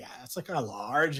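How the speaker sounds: put-on mocking affected voice. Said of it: "Why are you talking like that?".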